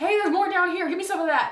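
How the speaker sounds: shrill yell, very high and very loud. Calling up to the group for a torch in character: yelling. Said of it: "as a free action, I'm yelling".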